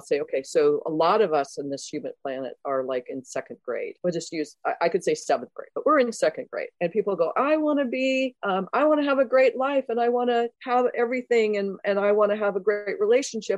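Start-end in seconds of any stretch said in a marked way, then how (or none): 7.4-13.6 play-acted high, moany, whinging tone. Quoting how people typically talk, put on a mock-whiny voice. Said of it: "you can hear my whiny voice in that".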